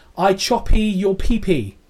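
mock shouting. Retelling what someone with a katana sword shouted: imitating someone shouting.

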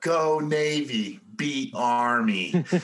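put-on very slow small child's voice, army drawn out. Retelling a kid who got a signed helmet from a football team, little kid voice. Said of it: "this little kid voice".

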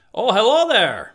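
high ogre voice. Friends all taking turns trying their Shreks, say it in a Shrek voice. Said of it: "Let's all try our Shreks".

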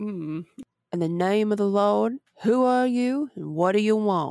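slow, put-on southern gentleman drawl. Asked to voice a man confronting an entity in a story, southern gentleman voice. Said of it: "like a southern gentleman".

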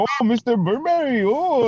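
very high, shrill, acted-out mocking tease. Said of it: "making fun of me".

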